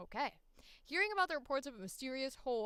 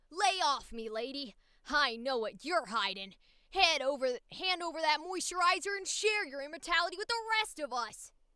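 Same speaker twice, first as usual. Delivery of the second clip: high, loud, slow, plucky cartoon kid-hero voice; 5 semitones higher, 7 dB louder than usual. Trying the same line without an accent, Ash Ketchum voice. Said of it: "I'd have to go Ash Ketchum".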